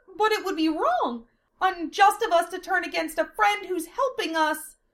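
crying out, very high and loud. Reading a story aloud, a woman character speaks her line, crying out. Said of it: "she cried out".

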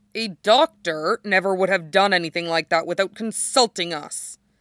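words pushed through a clenched jaw. Javert, forcing himself not to react, speaks through gritted teeth. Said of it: "says through gritted teeth".

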